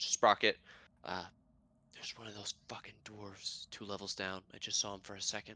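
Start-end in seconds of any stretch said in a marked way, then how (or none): 1.9-5.6 very hushed, fast, rushed whisper. Voicing a character warning the closest person about a dwarf below: whispering. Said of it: "will whisper to the closest person".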